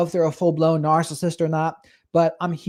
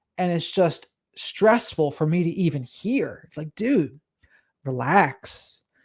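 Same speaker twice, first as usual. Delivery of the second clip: plain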